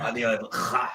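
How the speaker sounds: guttural ch and ein emphasized. Wondering how a man tells his boyfriend he loves him, the speaker uses emphasized guttural ch and ein. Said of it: "speaking with ch and ein. So if he emphasizes that".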